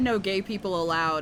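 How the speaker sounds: normal talking voice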